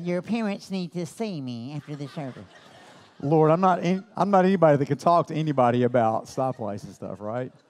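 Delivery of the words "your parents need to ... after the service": put-on church lady voice, much quieter. Standing up after a kid's remark at church, church lady voice. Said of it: "in my best church lady voice".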